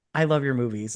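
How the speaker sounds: normal talking voice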